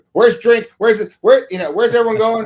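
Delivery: high, loud, frantic, scrambling calling out.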